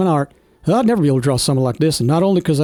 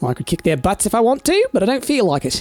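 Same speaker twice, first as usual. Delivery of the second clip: sing-song, swooping New Zealand accent, pitched up; 6 semitones higher than usual. Speaker checking a map slips into a Kiwi accent. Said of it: "why did I go into a Kiwi accent?".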